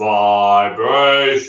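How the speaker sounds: big, deep, low voice. Showing a class how to say a word: big deep voice. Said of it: "in a big deep voice".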